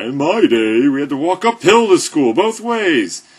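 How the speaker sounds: put-on shrill, booming, high, loud old-man grumbling. Joking about sounding old while talking about road trips: put-on old guy voice. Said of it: "I'm already starting to sound like an old guy".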